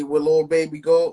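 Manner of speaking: ordinary talk, nothing marked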